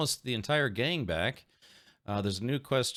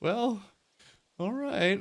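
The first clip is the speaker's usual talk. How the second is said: high, resigned tone of giving in; 8 semitones higher than usual. Retelling a character's reaction in a game: imitating Henry, resigned. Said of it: "He's just resigned to his fate".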